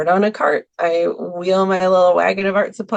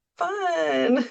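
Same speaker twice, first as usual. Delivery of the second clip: high, mock-polite "fun" with a laugh. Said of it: "just means, like, "I don't know what you're talking about"".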